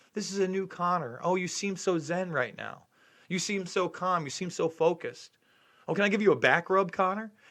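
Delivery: put-on gushing interviewer voice. Mocking an interviewer who patted his guest on the back: mocking Ariel Helwani, fawning tone. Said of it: "you patted him on the back while he did it".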